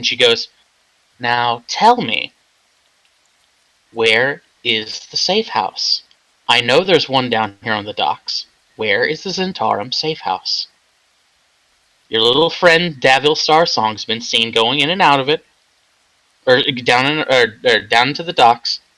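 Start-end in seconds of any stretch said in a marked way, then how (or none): 1.2-18.8 nonchalant, easy, unbothered tone. Sitting on a crate, questioning a man about a safe house, nonchalant. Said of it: "Tanavast is sitting on a crate very nonchalantly".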